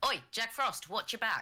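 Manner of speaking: very high, shouted, yelled delivery. A player's character Charlie calls out to Chiefly, yelling out. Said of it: "he is going to yell out to Chiefly".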